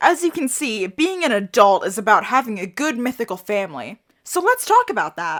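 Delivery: ordinary talk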